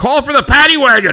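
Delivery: loud, high-pitched calling voice.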